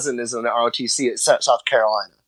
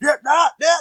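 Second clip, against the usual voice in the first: put-on screaming, higher pitch; 14 semitones higher than usual. Retelling a flag leader at a game screaming orders: imitating someone screaming orders. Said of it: "he just starts screaming".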